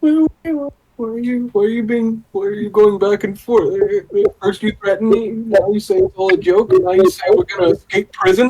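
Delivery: high, confused, pleading tone. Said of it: "confused, like".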